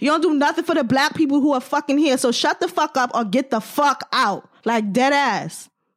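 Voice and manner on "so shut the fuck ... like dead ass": New York accent, much slower. Ranting at people who move to Bed-Stuy, telling them off in a New York accent. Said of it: "In my New York accent".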